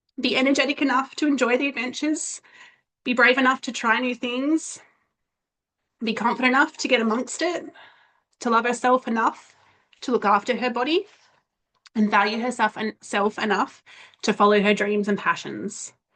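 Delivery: moved, heartfelt voice. A mother speaking about her girls, emotional. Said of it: "I get emotional".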